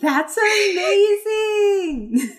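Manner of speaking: very high shrill yell, amazing drawn out. A character jumps for a second and calls out, yelling out. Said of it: "she yells out to the point where Connie appears".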